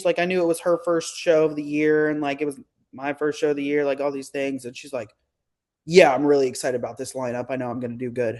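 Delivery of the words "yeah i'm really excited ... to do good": flat, low, straight-faced, confident deadpan. Retelling another competitor's answer backstage in line: imitating a deadpan reply. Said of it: "just straight face".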